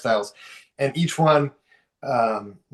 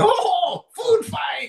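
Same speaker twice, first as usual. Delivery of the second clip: very high voice, giggling through the words; 3 dB louder than usual. Narrating a scene, voicing a henchman on the outskirts, giggling while talking. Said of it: "we see henchman giggling and going".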